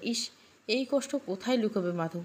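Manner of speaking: plain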